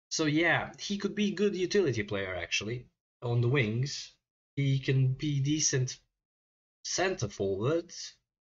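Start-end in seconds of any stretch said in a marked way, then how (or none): 4.5-5.9 "decent" stressed and said slowly. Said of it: "Emphasis on decent, not great".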